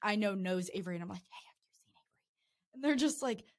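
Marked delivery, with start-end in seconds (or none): 1.2-2.7 slow, very quiet, barely audible whisper. Retelling searching a house for someone, asking people around: retelling a whisper. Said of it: "whispering to, like, basically anyone".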